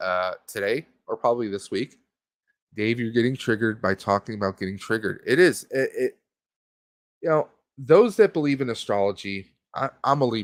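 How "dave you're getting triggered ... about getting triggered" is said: usual speaking voice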